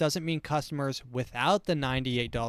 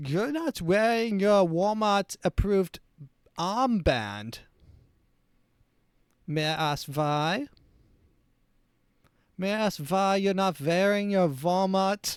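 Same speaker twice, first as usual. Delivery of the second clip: put-on, officious German accent, pitched up; 5 semitones higher than usual. Acting out a Walmart employee asking to see papers: mock German accent. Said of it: "this is supposed to be a Nazi accent".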